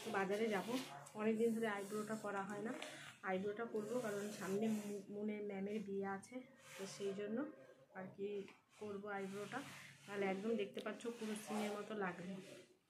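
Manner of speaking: speaking softly.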